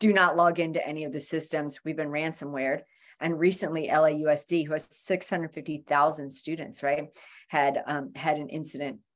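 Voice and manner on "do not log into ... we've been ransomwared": ordinary talk, nothing marked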